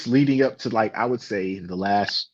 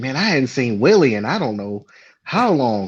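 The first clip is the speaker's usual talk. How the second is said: casual, offhand, reminiscing tone. Retelling what Jamie said to him, imitating Jamie's voice. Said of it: "if I butchered your voice".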